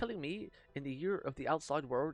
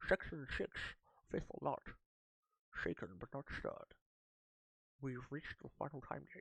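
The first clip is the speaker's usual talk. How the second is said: terrible put-on Scottish accent in a breathy whisper; 6 dB quieter than usual. Reading game text aloud to chat: terrible Sean Connery impression. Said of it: "That was a terrible impression".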